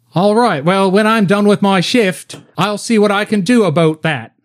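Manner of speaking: put-on Australian accent, pitched a bit up. Playing Josie, offering to look into plane parts after her shift, in an Australian accent. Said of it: "Josie from now on will have an Australian accent".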